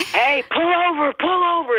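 mock hysterical screaming, very high-pitched. Telling a story, she re-enacts yelling at a driver beside her, retelling her own screaming.

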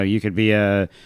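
ordinary talk

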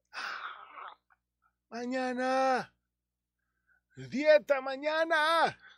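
very high, frantic, desperate, hysterical pleading cry. Acting out a voice from deep inside, in a mock desperate cry. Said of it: "así, desesperado".

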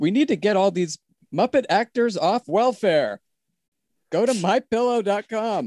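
very high-pitched, puppet-style voice. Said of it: "it's Sam Eagle".

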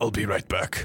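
large, weighty big-man character voice. Narrating a scene, the storyteller voices Isaac calling from the door, Isaac's booming voice. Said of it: "You just hear Isaac's booming voice".

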